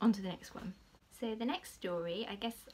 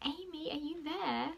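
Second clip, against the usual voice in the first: tiny, small, high little voice; 8 semitones higher than usual. Speaker retelling calling through a door to a girl from her trip, little voice. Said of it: "I said in my little voice".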